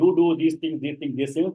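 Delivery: normal talking voice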